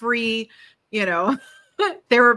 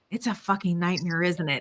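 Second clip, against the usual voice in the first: acted-out hushed whisper; 2 semitones lower, 6 dB quieter than usual. Retelling what a woman in the salon whispered in her ear, whispering. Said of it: "she leans over in my ear and she whispers".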